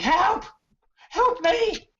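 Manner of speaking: put-on young boy's shrill, very high, loud scream. Game master voicing a young boy running in the distance, screaming young boy. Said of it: "and he's screaming".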